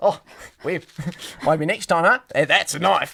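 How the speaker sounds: bad, clumsy, fake Australian accent. Speaker performs a joke bit, in a bad Australian accent. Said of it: "letting my bad Australian accent slip".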